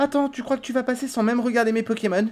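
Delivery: put-on high, soft, slightly eerie childlike fairy voice. Voicing a trainer who stops the player in a Pokémon game, childlike fairy voice. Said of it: "j'ai essayé de faire une voix euh, un peu euh, féerie, euh, enfantine".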